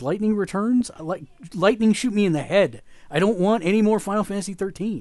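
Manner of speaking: high, loud ranting yell.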